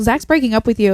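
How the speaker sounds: ordinary talk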